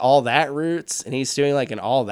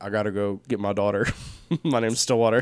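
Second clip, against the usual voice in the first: put-on Oklahoma accent, lower and quieter; 5 semitones lower, 4 dB quieter than usual. Talking about the movie Stillwater, doing a Matt Damon Stillwater impression. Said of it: "I have a Stillwater impression where he's just like".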